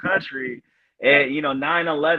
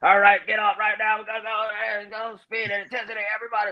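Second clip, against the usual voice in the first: hoarse, high, frog-voiced drill-sergeant barking yell; 7 semitones higher than usual. Recalling drill instructors getting on at the depot, imitating hoarse drill-instructor yelling. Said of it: "That's why I made that voice".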